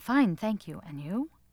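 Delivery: low muttering and mumbling. A narrator reads a mother rehearsing memorized polite phrases, muttering. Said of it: "constantly muttering things like".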